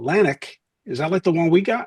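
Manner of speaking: put-on Philadelphia accent, regular guy. Retelling what a man asked the speaker, in a philly accent. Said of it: "he had the Philly accent".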